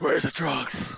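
put-on superhero growl. Retelling a scene where the hero interrogates a guy: Batman voice. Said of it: "I just love quoting his lines".

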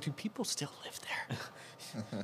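slow, soft, nervous hushed whisper.

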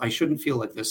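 plain

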